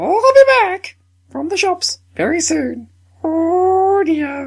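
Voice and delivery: very high pitch with stretched-out "oh". Suggesting a redub, giving example lines in the Monty Python Pepper Pot Lady voice. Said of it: "the Pepper Pot Lady voice used in Monty Python".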